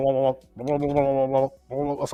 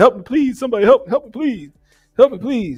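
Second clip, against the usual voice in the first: high, desperate begging, over and over; 8 semitones higher than usual. Speaker retells how bad the red sauce made them feel, mock-pleading like John Witherspoon. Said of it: "that sound like John Witherspoon on Friday".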